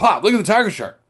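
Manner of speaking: high-pitched, fast, loud yelling.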